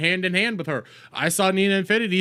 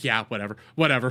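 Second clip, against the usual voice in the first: put-on dismissive chatbot voice, lower; 7 semitones lower than usual. Mocking a chatbot's careless answers: dismissive Grok impression. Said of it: "He just starts going like".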